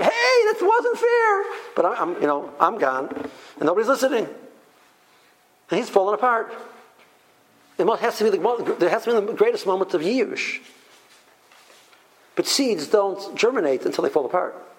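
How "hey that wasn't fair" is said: very high, slow screaming. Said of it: "She starts screaming".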